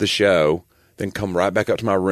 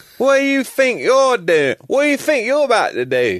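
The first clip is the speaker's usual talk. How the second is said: put-on angry British accent, very high, swooping; 4 dB louder than usual. Joking around in conversation, doing a mock-angry British accent. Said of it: "my favorite British accents, when they say fink".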